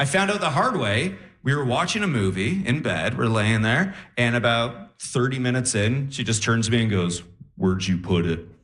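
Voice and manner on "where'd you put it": creepy killer voice, much lower. Retelling what she said while they watched a movie in bed, Buffalo Bill voice. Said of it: "why do you sound like Buffalo Bill?".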